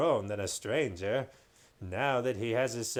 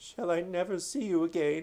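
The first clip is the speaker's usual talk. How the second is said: quavering, trembling, wavering voice; 5 semitones higher than usual. Narrating a story, the king asks his doctor, in a quavering voice. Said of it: "said Caspian in a quavering voice".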